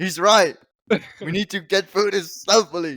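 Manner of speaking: half-hearted, mild, playful stage yell. Voicing a character agreeing the group must be stealthy: shouting at the top of her lungs.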